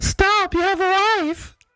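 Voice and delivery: very high, affected put-on woman's voice. Retelling a reply to an unwanted advance, imitating her voice. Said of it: "I don't know why I'm doing it in that voice".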